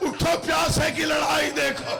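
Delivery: wailing, weeping cry.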